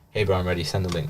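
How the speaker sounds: plain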